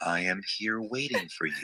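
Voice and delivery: low, menacing, eerie, unnervingly serene calm. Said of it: "Eerie calm, super calm, super villain calm".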